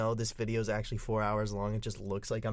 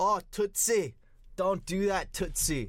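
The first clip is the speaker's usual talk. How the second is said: put-on Scottish accent, high and slow; 8 semitones higher, 4 dB louder than usual. Describing a favorite cartoon joke, imitating the scottish character, scottish accent impression. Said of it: "the Scottish guy is watching movies and reacting to them, and he goes".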